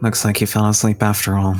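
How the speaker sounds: muttered under breath, to self. In a tabletop game, a player's character speaks while others sleep, muttering under breath. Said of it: "I just kind of mutter under my breath".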